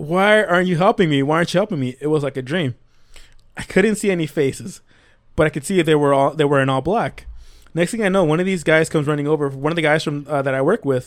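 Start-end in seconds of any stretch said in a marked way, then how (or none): 0.0-2.0 put-on scream, higher and louder. Retelling a man's story of being stuck between pallets: retelling a scream. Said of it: "he's screaming".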